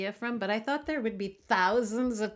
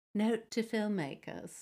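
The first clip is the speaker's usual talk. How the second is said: put-on British English accent; 4 dB quieter than usual. Quoting a woman's note about casting: put-on british accent. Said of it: "With a British accent".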